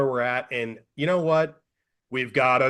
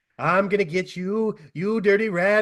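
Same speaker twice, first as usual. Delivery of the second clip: pitched-up thirties screen gangster voice; 6 semitones higher than usual. Speaker describes how a character sounds, then does a James Cagney impression. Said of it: "Jimmy James Cagney, the old nineteen twenties, thirties movie gangster".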